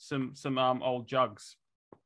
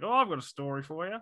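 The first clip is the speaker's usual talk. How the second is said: put-on Australian accent, pitched much higher; 4 semitones higher than usual. Retelling what a guy from work said to him, in a put-on Aussie accent. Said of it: "You put on the accent though".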